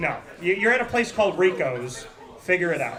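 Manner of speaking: ordinary delivery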